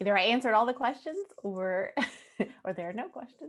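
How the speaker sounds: light laugh through the words, chuckling. Presenter checks for audience questions in a research talk, chuckling.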